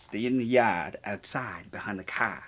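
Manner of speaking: put-on New York-accented speech. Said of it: "How's that sound?".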